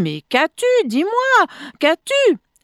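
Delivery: distraught, frantic, high swooping voice. The narrator questions the woman moaning in pain; distraught. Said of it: "Je demandai éperdu".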